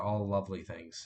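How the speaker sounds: ironic tone. Listing the three scariest midterms: sarcastic. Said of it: "And I say that sarcastically".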